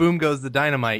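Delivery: plain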